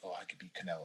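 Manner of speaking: very quiet, hushed whisper. Retelling a boxer whispering to his buddy: imitating Charlo whispering. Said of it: "he's whispering to his buddy".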